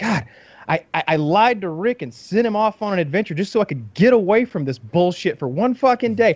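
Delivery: exasperated, high-pitched ranting.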